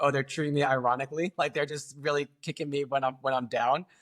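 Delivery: ordinary talk, nothing marked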